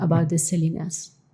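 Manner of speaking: plain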